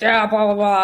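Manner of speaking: put-on New Jersey guy accent. Recounting a beach walk after a presentation, quoting a man's reply in a Jersey accent. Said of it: "in his Jersey accent".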